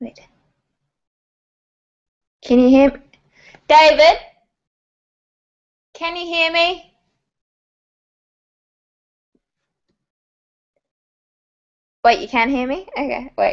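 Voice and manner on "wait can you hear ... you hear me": high-pitched, mild half yell. On a video call, checking whether others can hear them: yelling. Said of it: "I was like yelling".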